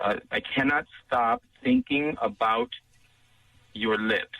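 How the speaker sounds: slowed-down delivery. Dictating a message so the listener can write it on the card, speaking slowly. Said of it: "I'm going to slow down so you can write it".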